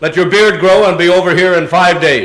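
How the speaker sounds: normal talking voice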